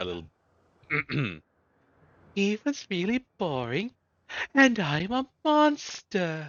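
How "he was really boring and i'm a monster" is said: attempted falsetto, put-on high female character voice. Trying to get back into character for her: attempted falsetto voice for her. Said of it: "get back into character for her".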